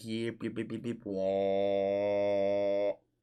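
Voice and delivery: slow, low alien yipping, stretched-out wah. Imitating the aliens from the Muppets while watching a sock puppet video: imitating the Muppets aliens. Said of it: "the aliens from the Muppets that would go like".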